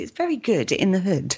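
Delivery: prim, proper, posh English accent. Joking about a saying, showing how it sounds in proper English. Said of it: "if you wanna go proper English".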